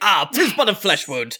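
put-on villain accent. Voicing a villain hit by an arrow: Torbjorn-like accent. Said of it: "I can't fucking with this guy's accent".

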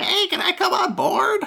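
tiny, squeaky, very high little voice. Game master voices Bucky, heard from below the edge; Bucky's small voice. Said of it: "You hear a small voice go".

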